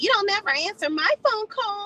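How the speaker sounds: very high crying voice. Retelling how the little sister complains to Mom: imitating someone crying. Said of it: "She starts crying to Mom".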